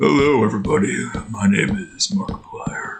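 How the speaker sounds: voice faked and dropped very low, deep. Doing a character voice, bringing it down a bit: slightly lowered put-on voice. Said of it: "I gotta bring my voice down a bit".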